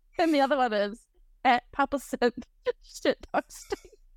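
giggly, laughing through the words, breaking into laughter. Telling everyone their second TikTok handle, the speaker is laughing while talking. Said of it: "I can't do it without laughing".

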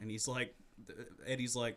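ordinary delivery

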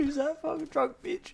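play-acted talking through laughter, very high, jeering. Retelling driving past a woman stomping through mud, acting out laughing. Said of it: "and I'm just driving past laughing, like".

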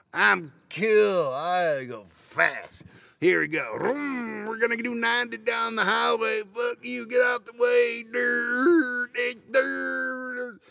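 very slow, high, dopey, cocky show-off bragging. Mocking a reckless driver who thinks speeding is cool: mocking a stupid cocky driver. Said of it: "you may not think you're stupid".

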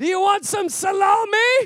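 high, drawn-out voice screaming out loudly. Retelling being offered food while walking past the office, imitating Havana screaming out. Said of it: "Havana screams out".

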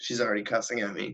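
ordinary delivery

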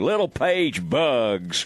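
put-on quintessential Texan broadcaster voice, Texas accent, relished. Imitating a tv broadcaster's quintessential texas voice saying a player's name. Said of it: "quintessential Texas, uh, voice".

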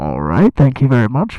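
very loud, low, muffled cupped-hands intercom voice. Speaker shows the stage intercom trick by cupping hands; cupped-hands intercom voice. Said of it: "just cup your hands and just like see if I can do it".

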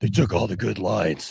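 very low, deep comic-book superhero voice. Imagining Batman walking around repeating what someone said, in a Batman voice. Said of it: "imagining Batman saying what Ty said".

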